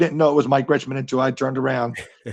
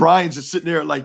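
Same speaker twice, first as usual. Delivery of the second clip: ordinary talk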